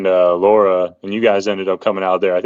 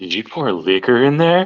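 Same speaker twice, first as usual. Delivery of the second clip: put-on whisper, higher pitched; 4 semitones higher than usual. Retelling a question asked in secrecy: imitating Caitlin whispering. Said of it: "kinda whispering to me, like, in secrecy".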